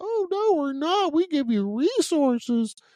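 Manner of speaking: very high, squeaky cartoon mouse voice, badly done. Mocking what the state says about officer mental health, in a Mickey Mouse voice. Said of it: "My worst Mickey Mouse voice".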